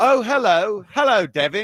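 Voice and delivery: imitated British accent. Imitating a boxer who sounded too fancy: put-on British accent. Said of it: "What kind of British accent was it?".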